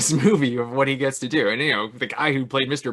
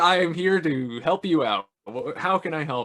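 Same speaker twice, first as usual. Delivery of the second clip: put-on suddenly polite voice, higher pitch; 3 semitones higher than usual. Retelling a film scene with Rowan Atkinson: imitating Rowan Atkinson, suddenly polite. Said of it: "able to do that so fast".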